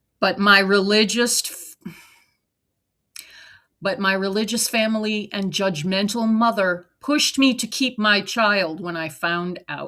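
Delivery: ordinary delivery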